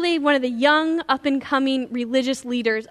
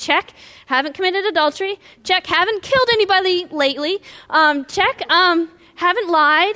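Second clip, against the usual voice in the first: acted, building, delighted excitement, pitched up; 5 semitones higher, 4 dB louder than usual. Acting out a man ticking off commandments one by one: getting happier and happier. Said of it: "the guy is getting happier and happier".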